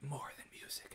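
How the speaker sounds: whispering. Vlogger demonstrating the phrase she uses on all her vlogs, whispered. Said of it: "I whisper it".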